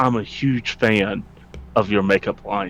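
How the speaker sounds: very low, hushed half-whisper. A young woman speaks to Miss Nix while she is getting clothes; half-whispering. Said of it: "she whispers like".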